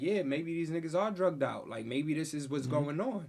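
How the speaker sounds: ordinary talk, nothing marked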